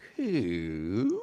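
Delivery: coup said doubtfully, stretched out. Trying out the word in different feelings: doubtful "coup". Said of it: "I'm gonna try a doubtful coup".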